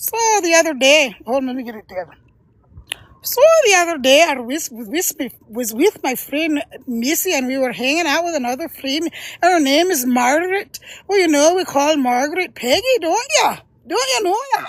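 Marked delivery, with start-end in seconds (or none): 3.2-14.7 chatty put-on Irish brogue, pitched up. Demonstrating one of the accents the speaker likes to do, Irish accent. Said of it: "my great grandfather was Irish".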